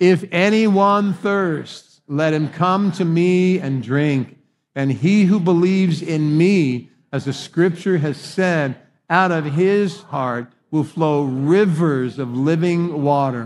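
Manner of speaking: crying out aloud. Leading a group reading scripture aloud together, in a raised loud voice. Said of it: "Raise our voices loud and read".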